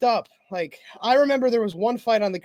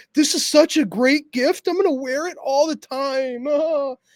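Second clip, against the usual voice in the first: high, gushing, fawning, pandering voice; 5 semitones higher than usual. Mocking a fighter accepting a gift: imitating Brendan Allen. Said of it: "He's like".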